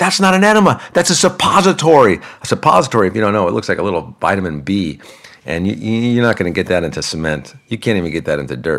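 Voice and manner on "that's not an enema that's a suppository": put-on very high, exasperated, frustrated yell. Retelling yelling at her over the wrong item: retelling a yell. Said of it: "And I'm yelling at her".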